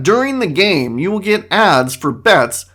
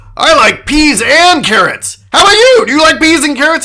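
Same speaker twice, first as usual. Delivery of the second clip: put-on loud talking voice, much higher; 8 semitones higher, 7 dB louder than usual. Retelling how a man talked loudly over two other people: imitating a man talking loudly. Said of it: "He's just talking loudly over them".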